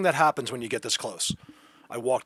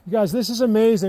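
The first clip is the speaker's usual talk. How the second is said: thrilled, excited shouting, loud and high; 9 semitones higher, 7 dB louder than usual. Talking to viewers about what they are seeing, yelling. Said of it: "I'm so sorry for yelling".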